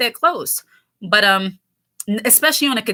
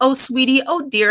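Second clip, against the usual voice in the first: put-on patronizing, condescending, motherly sweetness; 3 semitones higher than usual. Imitating women who mother you to keep you in place: condescending motherly tone. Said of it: "They're trying to mother you".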